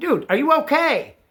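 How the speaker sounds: high-pitched hollering. Retelling finding a man who yelled for help, speaker re-enacts yelling at him. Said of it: "And I'm yelling at him".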